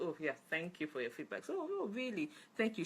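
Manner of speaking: insincere, mocking, sarcastic, swooping sing-song. Showing how not to thank people for their feedback: sarcastic tone. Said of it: "Don't be doing the sarcastic tone".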